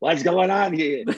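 mock elderly grandmother voice.

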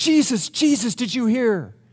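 out-of-breath, eager, high-pitched urgent voice. Acting out people rushing in to bring news: imitating breathless news-bringers. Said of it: "came in kind of breathlessly".

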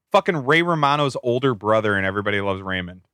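ordinary talk

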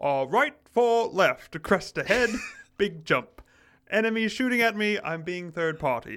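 put-on very loud, high, barking English accent. Imitating Gantz calling out on a team: Gantz English accent. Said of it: "Gantz talks in an English accent".

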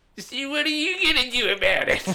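very high, jeering, taunting voice. Acting out the studio people's reply to the writer and director, mock-taunting. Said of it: "in his best striped biologist taunter voice".

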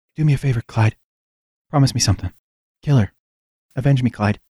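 dying woman's voice, weakening and slowly fading. Voicing a dying character asking Clyde to avenge her: voice getting quieter and quieter. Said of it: "her voice is getting quieter and quieter".

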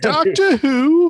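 very high, slow, bad mock English accent.

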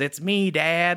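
slides up into a high-pitched cartoon voice. Retelling a friend's line in the game: imitating Bobby Hill. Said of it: "sounding exactly like Bobby Hill".

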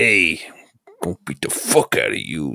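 put-on New York accent. Showing how he should talk to sound more intimidating, New York accent. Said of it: "New York up his voice a little bit".

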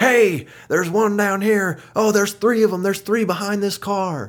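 very high-pitched, very loud shouting. Retelling how an old man on a porch gave them away: imitating an old man yelling. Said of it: "he starts yelling".

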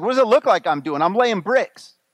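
put-on, dry, sarcastic, obvious-answer tone. Retelling a story of a bricklayer asked what he's doing: acting out a sarcastic reply. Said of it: "the bricklayer sort of sarcastically is like".

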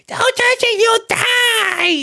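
very high, loud squealing cartoon alien, die stretched. Show how the Toad character sounds in the film, in a Jar Jar Binks voice. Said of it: "why does it sound like Jar Jar Binks?".

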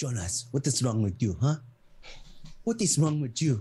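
put-on Filipino accent. Asked to do a Filipino accent, speaker imitates their mother addressing Jonas, Filipino accent. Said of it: "Why would I do a Filipino accent?".

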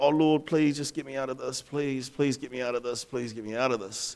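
mock whiny, begging plea. Retelling an old prayer to God: imitating a whiny prayer. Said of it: "the real whiny one where you go".

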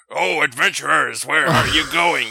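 orc monster character voice. Describing how some voices sound, imitating a Dungeon Master's orc voice. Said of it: "they sound like a Dungeon Master sounds when he's like, your party encounters an orc".

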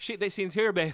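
bad, high-pitched, loud Australian accent. Retelling a comment by one of the best stunt people: bad Australian accent as Zoe Bell. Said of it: "that's not a good Australian accent".

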